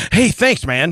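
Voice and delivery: put-on, super excited, overjoyed, gushing voice. Retelling how the window worker thanked him: imitating super excited thanks. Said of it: "Like that. Super excited".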